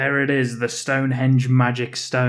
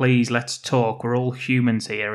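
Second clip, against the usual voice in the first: ordinary talk, nothing marked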